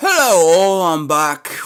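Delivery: too loud voice. Greeting viewers on coming back, too loud a greeting. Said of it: "Whoa, that's loud".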